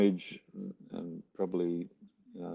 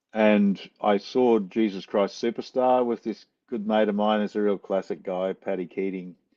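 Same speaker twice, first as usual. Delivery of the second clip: ordinary talk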